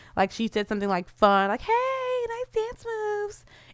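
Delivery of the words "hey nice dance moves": tiny, very high, soft, slow doll voice. Speaker acts out a girl complimenting a man's dancing, in a little Barbie voice. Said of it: "in her like little Barbie voice".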